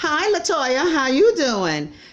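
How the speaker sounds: high, swooping, slow talk-show host voice. The speaker greets Latoya in a Wendy Williams impression. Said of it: "how you doing in my Wendy voice".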